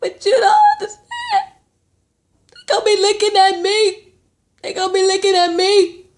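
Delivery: acted sobbing through the words, very high and tearful. Retelling a reality show scene, imitating someone crying. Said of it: "she's crying like".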